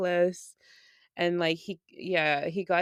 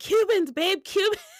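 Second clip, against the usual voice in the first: put-on, shrill, very high, loud calling out; 13 semitones higher, 5 dB louder than usual. Retelling how she always shouts at him about what she wants, retelling her own shouting. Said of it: "I was literally just shouting at him".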